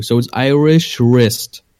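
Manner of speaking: slow, careful Irish wrist, w dropped. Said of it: "so just ignore the W".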